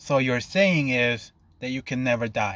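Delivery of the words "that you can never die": ordinary delivery, nothing marked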